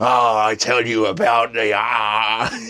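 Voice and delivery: loud, hammy, theatrical voice with drawn-out "ah". Showing how a game master speaks as a character at the table: hammy role-play voice. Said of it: "it goes almost LARP with it".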